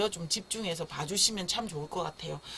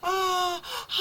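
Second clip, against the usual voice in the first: high yawning "ah-ha" sound. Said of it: "하품할 때 어떻게 해요?".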